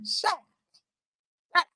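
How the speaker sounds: soft, dismissive grandma-style voice. Acting out a man who took fifteen minutes to answer, sounding like a grandma. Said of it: "Sound like my grandma".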